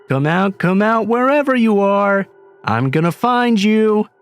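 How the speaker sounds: high, teasing, needling taunting call. Reading aloud a seeking cousin calling out, high taunting call. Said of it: "I heard him call out in that high voice".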